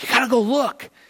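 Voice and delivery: high, fast, urgent woman's voice. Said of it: "she goes".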